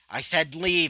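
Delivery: furious, angry voice. Narrating a story, voicing a character's line in an angry tone. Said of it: "in an angry tone".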